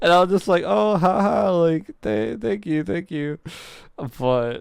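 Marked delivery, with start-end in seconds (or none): 0.7-3.4 play-acted uneasy, halting, stammering delivery. Retelling a reply to a coworker's compliment: imitating awkward uncomfortable thanks. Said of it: "it was a little uncomfortable".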